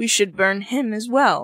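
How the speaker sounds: usual speaking voice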